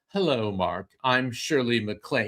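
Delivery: put-on polished classic film-star Mid-Atlantic accent. Retelling a phone call, imitating Shirley MacLaine's old Hollywood Mid-Atlantic accent. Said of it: "she has that perfect old Hollywood".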